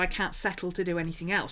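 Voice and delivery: ordinary talk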